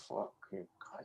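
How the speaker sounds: soft whisper, muttered under the breath.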